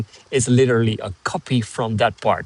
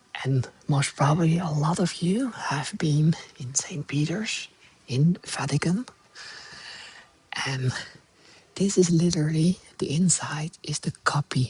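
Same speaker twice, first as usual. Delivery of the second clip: whispering, higher and quieter; 3 semitones higher, 8 dB quieter than usual. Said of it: "so I'm just gonna whisper a little bit".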